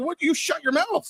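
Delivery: mock very high, heated shout. Retelling what was said to Sam about his stats: retelling a yell. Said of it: "I'm yelling at him".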